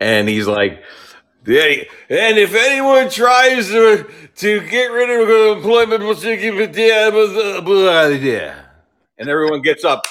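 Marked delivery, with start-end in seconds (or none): 1.5-8.7 pumped-up, very high-pitched, raised rally-style speech. Retelling a clip where Biden tries to be cool: imitating Biden raising his voice. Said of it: "he's trying to raise his voice".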